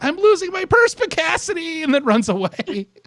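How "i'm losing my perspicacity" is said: very high, panicked, frantic shrieking scream. Retelling a cartoon scene where Lisa Simpson screams: imitating Lisa Simpson screaming. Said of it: "And she just screams".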